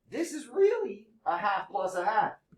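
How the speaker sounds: voice cracking. Speaking to a class of students, voice cracking. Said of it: "Glad my voice is finally cracking".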